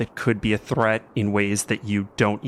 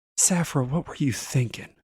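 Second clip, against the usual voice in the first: soft, quiet, pitched-up disappointment, without malice; 5 semitones higher than usual. Narrating a scene, a woman speaks to Saphira in a quiet disappointed voice. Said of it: "with almost no malice in her voice, just disappointment".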